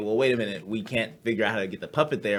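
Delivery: normal talking voice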